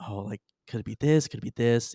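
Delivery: low muttering, mumbled. Voicing a character writing in a small book: muttering to herself. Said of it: "she's, like, muttering to herself".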